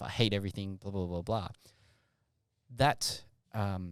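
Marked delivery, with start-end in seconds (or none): none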